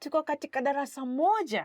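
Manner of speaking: surprised, voice lifting on the final words. Demonstrating a Swahili sentence that expresses surprise, surprised, rising at the end. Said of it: "you kind of raise your voice a little bit".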